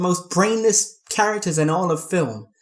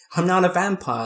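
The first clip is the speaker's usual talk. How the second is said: ordinary talk, nothing marked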